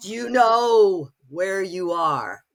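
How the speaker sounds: slow vampire drawl with "know" stretched out. Retelling the voice that boomed out after a terrible scare: booming Bela Lugosi voice. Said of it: "this voice booms out just like a Bella Lugosi movie".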